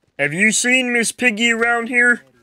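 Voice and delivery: put-on frog puppet voice. Doing a voice while playing, asking about Miss Piggy: Kermit the Frog voice. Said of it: "I lost my Kermit voice".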